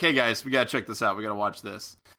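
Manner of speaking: ordinary talk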